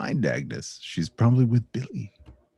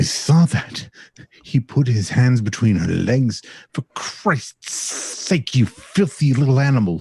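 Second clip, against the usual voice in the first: put-on enraged, furious older woman's voice; 2 semitones higher, 4 dB louder than usual. Voicing an older woman on a phone call: furious older woman's voice. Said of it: "Older woman's voice is furious".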